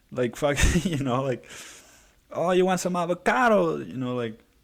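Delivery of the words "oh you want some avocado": exaggerated fake Mexican accent, pitched up. Speaker mimicking how people made fun of Mexicans, bad Mexican accent. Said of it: "like bad accents".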